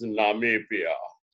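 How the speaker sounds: put-on deep voice. Retelling meeting a man at Cape Town airport, quoting him in a deep Namibian voice. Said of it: "like that deep Namibia voice".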